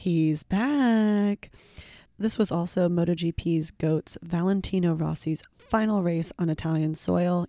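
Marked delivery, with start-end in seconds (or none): 0.0-1.5 put-on Texan accent with drawn-out drawl. Impression of texas fans on a rider's return: imitated texan accent. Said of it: "in my best impression of Texas fans".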